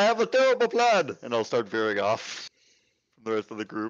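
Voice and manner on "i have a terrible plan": very high-pitched, loud put-on shout. Calling out to the group while veering off: shouting in character. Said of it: "I will shout out and say".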